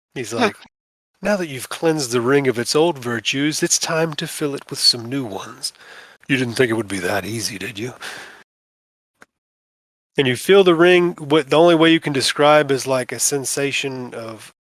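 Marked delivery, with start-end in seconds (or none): 1.2-7.9 slimy, oily, slick, greasy voice. Game master voicing a presence in the ring speaking inside a player's head: slimy voice. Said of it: "kind of a slimy voice".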